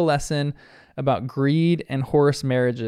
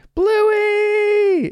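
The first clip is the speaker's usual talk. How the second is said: mock very high, stretched-out, loud, shrill shout; 5 dB louder than usual. Recapping a cartoon episode's first scene, imitating Muffin yelling. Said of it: "she is yelling".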